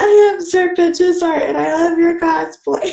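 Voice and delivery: high, silly mock yell.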